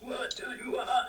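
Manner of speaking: creepy, eerie voice. Asking a question that a listener then calls creepy: creepy voice. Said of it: "that's a creepy voice".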